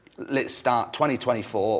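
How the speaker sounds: usual speaking voice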